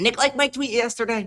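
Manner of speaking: twittering, chirpy, high little bird voice. Retelling what Callie said about a tweet, the speaker mimics her: bird-like impression of Callie. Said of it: "you sound like a bird".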